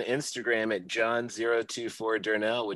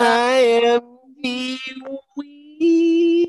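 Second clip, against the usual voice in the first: very high, loud falsetto note; 12 dB louder than usual. Podcast host opening the show, high falsetto. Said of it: "I went a little high with it".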